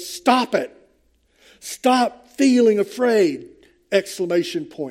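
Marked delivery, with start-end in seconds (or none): 0.0-3.5 put-on angry shout, higher pitch. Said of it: "We can read it as he's shouting it at us".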